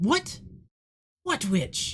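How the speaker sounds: put-on high-pitched elderly woman's voice. Narrating to listeners as the elderly lady replies, elderly lady voice. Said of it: "As you hear the voice of this elderly lady".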